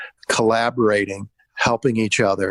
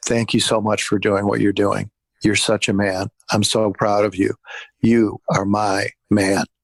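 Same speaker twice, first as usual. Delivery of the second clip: softly whispered. Retelling what she says to him on his break, whispering in his ear. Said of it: "she whispers in his ear".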